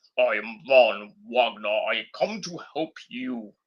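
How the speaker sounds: low-pitched, robotic, machine-like voice. Speaker describes a wrestler placed in a title match; Von Wagner robot voice. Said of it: "He sounds like a goddamn robot".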